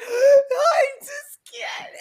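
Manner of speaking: acted-out sobbing screams. Speaker reenacts herself at 33, crying hysterically, imitating screaming and weeping. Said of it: "I was screaming and weeping".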